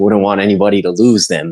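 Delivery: frightened, cowering character voice. Voicing Tool, who pretends to have found the cards: terrified character voice. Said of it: "she seems pretty terrified of the giants".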